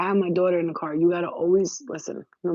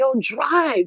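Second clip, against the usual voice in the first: high, screamed-out delivery; 7 semitones higher, 4 dB louder than usual. Retelling screaming at a slow driver ahead: imitating own past scream. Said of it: "And I screamed out".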